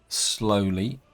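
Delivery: leaning on 'slowly'. Updating on the road still being pushed through, stress on 'slowly'. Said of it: "the emphasis on the word slowly".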